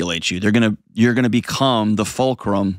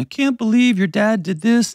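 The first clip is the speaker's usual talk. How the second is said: mock weeping in a very high, tearful voice; 12 semitones higher than usual. Describing a call from a crying mom, imitating a crying mom. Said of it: "your mom calls you and she's crying".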